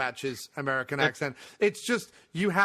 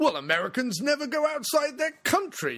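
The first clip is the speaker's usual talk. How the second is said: mocking arrogant English manner, higher pitch; 10 semitones higher than usual. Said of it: "the English arrogance and assumption where they say".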